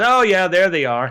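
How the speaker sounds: put-on casual, unbothered, offhand aside. Retelling a companion's reply to a massive object overhead: imitating a nonchalant remark. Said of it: "he just very nonchalantly says to me".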